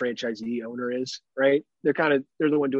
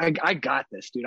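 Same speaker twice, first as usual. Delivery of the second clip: put-on manly, macho voice. Retelling ordering a sandwich from the workers: imitating own manly macho talk. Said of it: "serious, like, manly macho talk".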